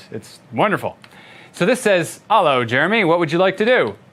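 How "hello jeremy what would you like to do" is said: joking, put-on rustic yeoman's accent. Demoing a command-line tool's greeting prompt, reading it in a mock yeoman's accent. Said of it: "that's in a yeoman's accent, obviously".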